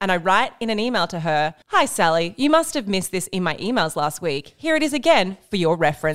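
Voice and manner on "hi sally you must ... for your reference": ordinary talk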